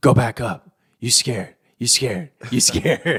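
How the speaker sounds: taunting, whispery stage whisper. Retelling a player's joke about trash talk from high up: imitating whispered trash talk. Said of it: "it sounds like he's whispering".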